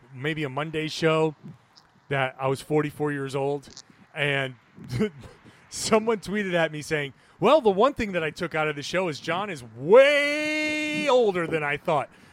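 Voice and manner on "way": "way" stretched with many a's, stressed. Reading out a tweet someone sent him about his age, with stressed, drawn-out "way". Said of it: "Emphasis, like a lot of A's in way".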